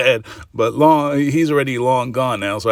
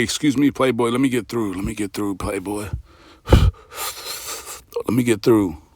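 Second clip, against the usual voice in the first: close, hushed whisper right up against the ear; 3 semitones lower than usual. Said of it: "he's going in your ears and he say".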